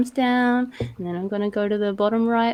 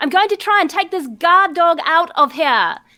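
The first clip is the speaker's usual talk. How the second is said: shouting, higher and louder; 7 semitones higher, 5 dB louder than usual. Calling out in character for the others to cover: yelling. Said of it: "I'm gonna yell out".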